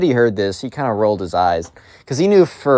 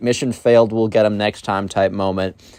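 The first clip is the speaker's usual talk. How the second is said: plain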